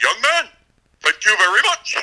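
very high pitch with big swoops. Retelling being thanked from afar: Howard Finkel voice. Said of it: "in the distinct Howard Finkel voice".

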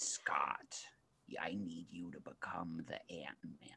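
rough gravelly impression. Acting out a scene, addressing scott, in a gravelly put-on voice. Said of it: "Gravelly voice".

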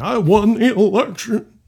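loud, high, slow, drawn-out voice. Imitating a politician insisting he won: Trump impersonation. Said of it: "that's my best Trump impersonation".

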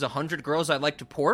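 ordinary talk

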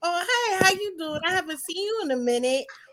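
genteel, courteous, ladylike manner. Showing how to greet a man: imitating own very ladylike approach. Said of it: "I always will be very ladylike".

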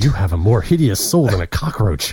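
muttered under breath. Retelling what a woman mutters under her breath between lines: muttered under her breath. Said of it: "Then under her breath".

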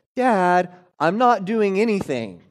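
put-on little kid voice. Father retelling what his three-year-old son called out to him, in Sam's little voice. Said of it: "I hear a little voice that says".

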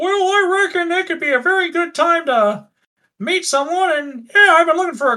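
very high, squeaky frog-person character voice. Voicing a frog person answering the orc: frog person voice. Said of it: "the frog just looks at Puck and goes".

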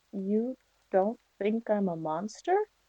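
under-the-breath mutter. Voicing a character asking a hunter a question: very low under her breath. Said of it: "very low under her breath".

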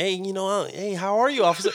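put-on friendly, charming nice-guy voice. Retelling being pulled over, greeting the officer: put-on nice-guy [name] voice. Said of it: "I try to put my nice guy, you know, persona".

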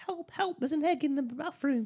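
very high, frantic, panicked scream. Speaker retells a scene where a woman hears knocking, retelling a scream for help. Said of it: "she starts screaming".

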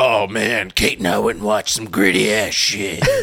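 rough, gritty, low, gravelly growling voice. Mocking the other speaker's voice right after it turned gravelly: imitating a gravelly voice. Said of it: "it's like".

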